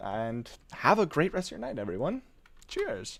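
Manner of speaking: soft voice breaking and cracking a little. Signing off to everyone for the night, voice cracking. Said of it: "my voice cracked a little bit".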